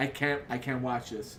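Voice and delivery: ordinary delivery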